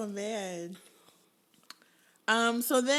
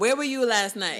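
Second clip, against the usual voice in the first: ordinary talk, nothing marked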